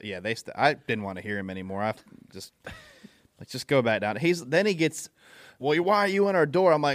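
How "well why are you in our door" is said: hollering at raised pitch. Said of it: "He comes down there hollering at me".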